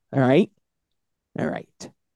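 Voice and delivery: ordinary talk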